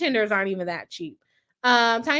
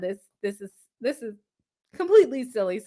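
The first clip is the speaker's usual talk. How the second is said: fast, stuttering repeats of the same words; 2 semitones lower than usual. Reacting to a viewer's comment read aloud, stuttering. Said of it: "Sorry, I'm stuttering".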